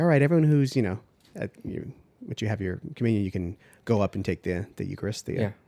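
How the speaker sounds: ordinary delivery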